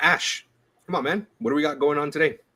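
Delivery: weary, nagging, mock exasperated impatience. Asking another speaker what is going on today: mock impatience. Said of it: "Why you say it like you've asked me fourteen times?".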